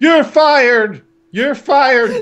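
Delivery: shouting. Acting out a character screaming at employees during a story reading: screaming. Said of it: "he's just screaming at employees".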